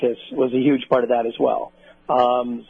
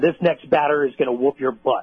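ordinary talk

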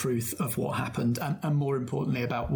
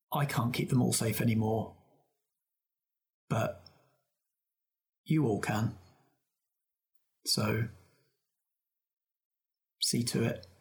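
gentle, mild tone that still carries. Narrating Pat, floating on their back mid-lake, speaking to everyone, soft voice. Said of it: "just says in quite a soft voice".

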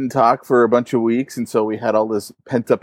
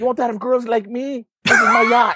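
exaggerated fake Vietnamese accent, very high; 11 semitones higher than usual. Imitating an infomercial seller's pitch: imitating a really bad accent. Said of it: "gotta say it with a really bad accent".

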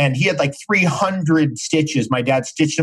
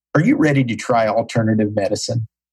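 low gravel-voiced tone; 4 semitones lower than usual. Retelling what a doctor asked patients who unloaded on him: Dr. Hitt's deep gravelly voice. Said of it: "in his deep gravelly voice".

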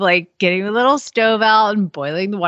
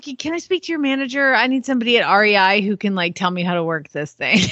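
mock helpless, pleading voice. Imitating a friend calling a store for help: imitating a friend asking for help. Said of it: "she'll be like".

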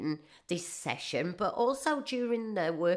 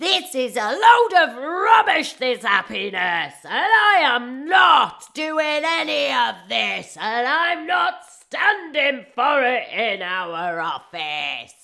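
very loud, high-pitched shouted outburst; 6 semitones higher, 11 dB louder than usual. Retelling how an audience member stood up and objected: imitating a woman shouting. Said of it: "she shouts, and I mean shouts".

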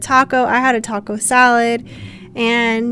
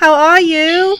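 attempted, raised, high Australian accent edging British; 5 semitones higher, 5 dB louder than usual. A guest called onto a podcast greets the host, attempted Australian accent. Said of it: "Is that your best Australian accent?".

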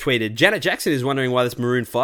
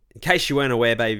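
ordinary delivery

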